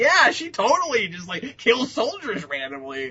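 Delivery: slow, swooping, mock-casual facetious sarcasm. Imitating the other speaker's earlier tone, imitating a facetious tone. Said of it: "you had that tone you had earlier".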